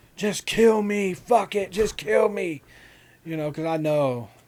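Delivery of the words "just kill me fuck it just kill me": high, loud, despairing screaming and yelling. Retelling being pulled out by sixty cops: imitating own screaming and yelling. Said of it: "screaming and yelling, like".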